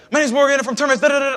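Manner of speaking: rapid-fire, very high, rattled-off rushed delivery. Speaker recalls how they first rushed through pitches on calls: very fast talking. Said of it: "the main reasons that I talked so fast".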